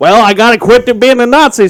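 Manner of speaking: put-on cartoon rooster voice. Riffing on a cartoon rooster captured by a U.S. soldier, Foghorn Leghorn voice. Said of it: "and he's like".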